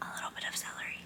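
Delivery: hushed, very quiet whisper under the breath. Telling viewers what's in the soup, hiding one ingredient from her, whispering. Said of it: "I have to whisper that because she hates it".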